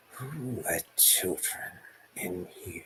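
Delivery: soft, quiet, menacing rasp. The narrator voices the city lord Asmir Hardry addressing the group, rasping. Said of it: "and he rasps".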